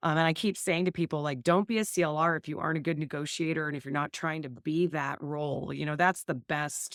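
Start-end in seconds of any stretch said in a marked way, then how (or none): none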